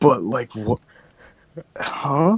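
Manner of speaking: high, baffled voice struggling to make sense. Reacting to a story another speaker just told: struggling voice. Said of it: "you can hear the struggle in my voice right now".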